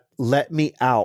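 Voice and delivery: ordinary talk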